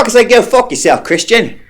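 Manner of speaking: very high, bad fake English accent drifting Australian. Testing whether they can do an English accent right now: attempted English accent. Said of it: "in an English accent".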